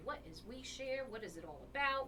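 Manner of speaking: normal talking voice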